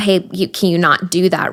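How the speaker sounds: normal talking voice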